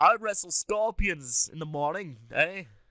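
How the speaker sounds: put-on clumsy Australian accent, slipping Canadian. Trading put-on accents with another speaker, boasting in a bad Australian accent. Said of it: "I'm sound starting to sound Canadian".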